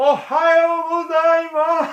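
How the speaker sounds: very high, loud, drawn-out all-out yell. Speaker retells shouting to a lone hiker, retelling a loud shout. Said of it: "As loud as I could".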